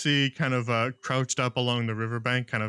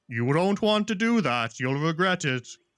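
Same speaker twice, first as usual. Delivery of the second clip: big, loud, high-pitched booming voice; 6 semitones higher, 3 dB louder than usual. Voicing an unseen figure demanding a bridge toll: booming voice. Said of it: "a voice booms out loud".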